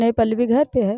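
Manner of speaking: ordinary talk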